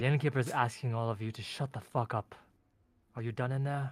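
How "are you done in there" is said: sultry elf-like voice. Game master voices the innkeeper at the players' door, sultry elven Kosi J voice. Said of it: "You hear his elven, sultry voice".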